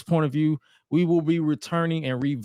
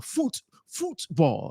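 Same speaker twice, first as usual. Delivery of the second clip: badly done put-on British accent, swooping sing-song; 3 dB quieter than usual. A host introducing a football round-up says the word football: bad British accent. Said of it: "that's my bad uh, British accent".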